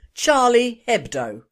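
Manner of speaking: name pronounced with an English accent. Addressing the french, saying the name with an english accent on charlie hebdo. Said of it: "my English pronunciation of their Charlie Hebdo".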